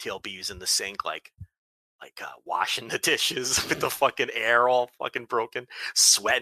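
hushed whisper with the voice dropped low. Telling a story about someone washing dishes in the sink: whispering. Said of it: "I have to whisper this part".

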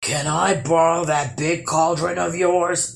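low, rumbling troll voice. Narrator reads a tale, voicing a troll overheard by a hiding boy: rumbling troll voice. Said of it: "rumbled a troll voice".

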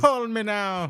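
high-pitched put-on Jamaican accent. Echoing the psychic hotline ad line: Miss Cleo impression. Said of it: "talking to Miss Cleo".

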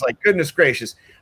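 ordinary talk, nothing marked

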